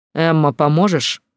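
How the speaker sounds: ordinary delivery, nothing marked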